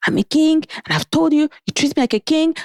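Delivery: mock very high, shrill screaming tirade. Telling a story about a man, imitating him screaming. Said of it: "he just starts screaming".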